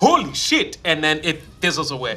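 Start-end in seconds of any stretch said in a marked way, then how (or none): 0.0-0.8 put-on Sugar Island accent. Voicing an illusion of Mog that jumps up: Sugar Island accent. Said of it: "in a, a Sh-, Sh-, Sugar Island accent".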